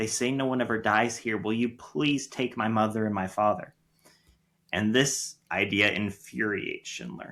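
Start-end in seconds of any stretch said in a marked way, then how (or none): 0.0-3.7 put-on young woman's voice, desperate and pleading. Retelling a film scene where a young woman asks Schindler for help: imitating a young woman pleading. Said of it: "came to him begging and pleading".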